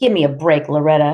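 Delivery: plain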